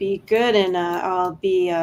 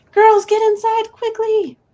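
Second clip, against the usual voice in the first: loud, high-pitched scream. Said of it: "and she screams".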